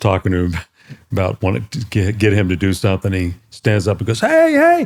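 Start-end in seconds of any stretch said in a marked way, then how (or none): 4.2-4.9 loud yelling, high pitch. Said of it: "He's yelling at the cars".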